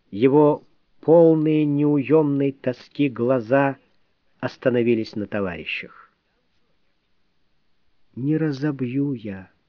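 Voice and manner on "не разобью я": quiet, hopeless, doomed tone. Reading a man's words to his comrades in a story, quiet, doomed tone. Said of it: "тихо, тоном обреченного".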